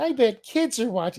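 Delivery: very high, squeaky cartoon-mouse voice. Mocking a man's quoted line in his Mickey Mouse-like voice. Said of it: "He sounds like Mickey Mouse is getting".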